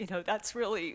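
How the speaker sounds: voice catching as it rises. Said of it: "So I'm gonna get choked up".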